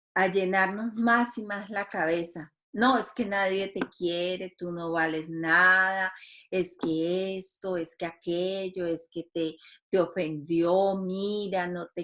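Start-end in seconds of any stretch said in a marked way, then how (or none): none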